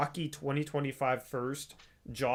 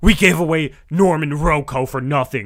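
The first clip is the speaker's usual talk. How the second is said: mock furious, raging voice, louder; 15 dB louder than usual. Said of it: "your voice was just dripping with rage".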